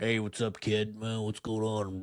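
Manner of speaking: put-on, swaggering, tough-guy cowboy voice. Mocking a man's tough-guy way of talking, imitating a tough-guy cowboy. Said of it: "he's just talking like the cowboy".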